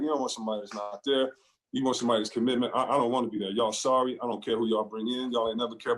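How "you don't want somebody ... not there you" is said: usual speaking voice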